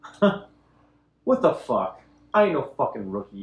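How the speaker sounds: smug, sneering, smirking, scornful comeback. Voicing a character who brushes off a player's attempt: smirking, scornful in-character retort.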